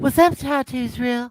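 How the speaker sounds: very high, light upper head voice. Doing a best imitation of Michelle for the others: imitating Michelle. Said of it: "best imitation of Michelle".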